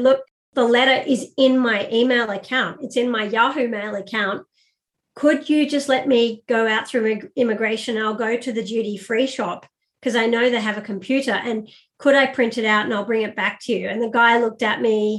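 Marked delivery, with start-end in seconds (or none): none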